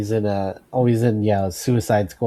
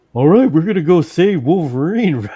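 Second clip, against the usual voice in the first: very loud, high, goofy put-on voice; 9 semitones higher, 8 dB louder than usual. Describing the voice he imagines for a character: goofy voice. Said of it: "my voice I have in my head is just like got a kind of like a goofy a goofy voice".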